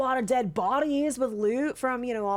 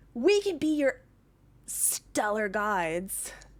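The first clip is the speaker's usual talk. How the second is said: put-on goblin character voice. Voicing a goblin who greets travelers at a web path: goblin voice. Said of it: "two goblins appear".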